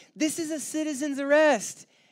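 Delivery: very high, slow, drawn-out, furious scream. Recounting a video where an angry woman confronts people over parking, retelling a scream. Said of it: "she screams".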